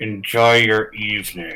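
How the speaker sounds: words forced through gritted teeth, jaw clenched. Roleplaying a character saying goodbye as another leaves, through gritted teeth. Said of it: "I say through gritted teeth".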